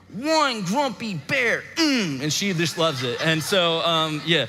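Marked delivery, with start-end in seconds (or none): 0.1-1.6 grouchy, grumpy bear voice. Describing reading a children's book to Willow, doing the grumpy voice. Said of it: "I like get my grumpy voice and I'm like".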